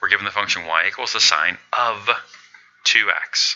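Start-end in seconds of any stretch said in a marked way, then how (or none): 1.1-3.6 heavy stress on the word "of". Calculus practice, reading the function y equals sine of two x, stress on 'of'. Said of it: "I emphasize the word of there".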